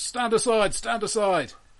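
shouting. The man beside the coach driver points his blunderbuss at Vatha, shouting a warning. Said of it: "points his blunderbuss at Vatha and shouts".

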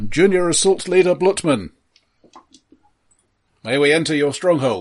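very loud, blaring, booming voice. A character introduces himself and asks to enter, in a very loud voice. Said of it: "his voice comes out very loudly".

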